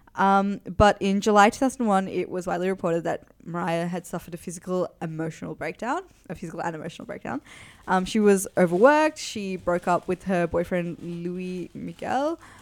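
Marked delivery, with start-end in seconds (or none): 11.0-12.4 French accent on a name. Naming an ex-boyfriend while recounting events: french accent. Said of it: "the French accent".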